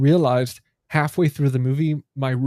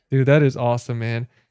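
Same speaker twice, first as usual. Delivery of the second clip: normal talking voice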